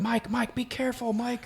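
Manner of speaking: acted out screaming, very high. Retelling a film scene where a character calls after a friend: imitating someone screaming a warning. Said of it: "she's screaming at him".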